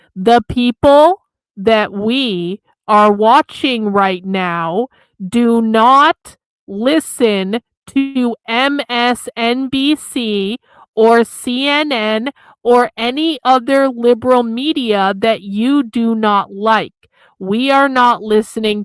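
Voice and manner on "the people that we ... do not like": deliberately slow, spelled out. Talking down to someone they just called stupid, saying it real slow. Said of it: "let me say this real slow".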